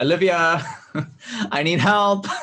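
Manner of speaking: shrill, desperate cry at full volume, very loud, high. A player's character shouts back to a vampire for help, shouting really loudly. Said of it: "I shout back really loudly".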